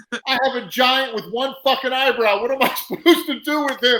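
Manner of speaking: high, loud screaming ranting outburst. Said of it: "He's screaming".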